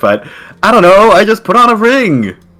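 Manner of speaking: high-pitched scream that builds as it goes. A player's character answers when asked what he did: screaming. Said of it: "he's screaming at this point".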